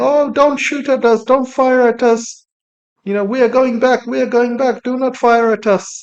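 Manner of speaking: high, crying, pleading put-on Indian accent. Speaker retelling Indian sailors pleading with the Iranian navy, mock-crying in Indian accent. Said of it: "crying with the Indian accent".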